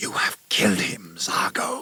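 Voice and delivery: whispered, furious, angry hiss. Narrator voices Camilla speaking to Zargo beside a body, hissed. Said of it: "she hissed".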